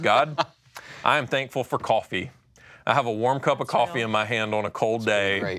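heavily sarcastic delivery. Describing giving thanks to god, acting out getting really sarcastic with it. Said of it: "getting really sarcastic with it".

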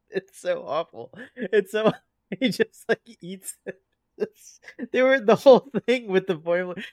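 words broken up by laughing. Recounting a funny scene to another speaker, laughing while talking. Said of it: "Sorry, I'm laughing again".

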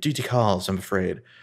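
put-on British accent. Retelling a scene where a character ends a phone call: British accent. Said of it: "in his British accent".

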